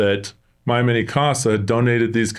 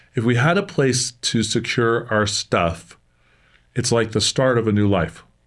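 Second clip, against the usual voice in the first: choked-up, breaking voice catching with emotion. Speaker apologizes mid-explanation to listeners, choked up. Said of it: "I get choked up a little bit too".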